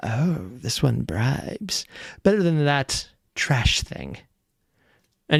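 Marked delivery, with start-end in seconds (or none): 0.0-4.2 slow, drawn-out, hushed whisper. Voicing a spirit heard whispering about another: whispering. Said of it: "You just hear it whispering".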